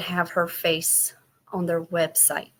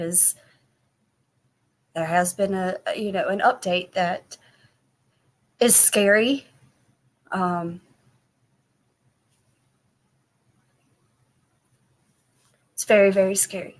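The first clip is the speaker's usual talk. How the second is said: audibly moved, struggling to stay composed. Giving her Facebook group an update about family news, getting emotional. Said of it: "Sorry, I'm getting emotional".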